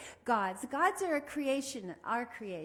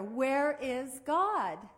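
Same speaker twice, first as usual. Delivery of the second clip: a bit louder, much slower. Speaker retells a minister repeating his question to a child, a little louder. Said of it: "repeated the question a little bit louder".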